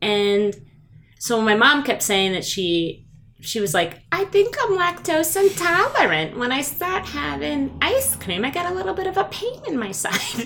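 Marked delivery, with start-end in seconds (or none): 4.1-10.5 very high, animated, swooping sing-song put-on voice. Retelling what mom kept saying about a pain: imitating mom's voice. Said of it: "my mom hated when I would do that voice for her".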